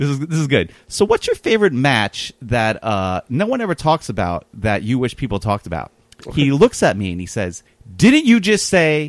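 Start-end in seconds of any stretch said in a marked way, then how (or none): 8.0-9.1 furious, very angry, very high-pitched raised voice. A speaker retells what a man on his flight snapped at him: retelling an angry reply. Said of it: "very angrily".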